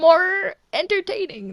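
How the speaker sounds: voice breaking mid-word. Talking about how their voice for a character changed: voice cracking. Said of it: "Voice crack".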